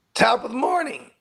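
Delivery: voice jumping up very high in pitch. Greeting viewers at the start of the stream: voice went high-pitched. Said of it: "My voice went high pitch".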